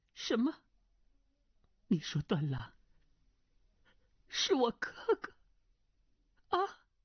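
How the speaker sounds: quavering, shaken tone. A narrator reads a woman's question in a trembling voice. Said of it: "颤声道".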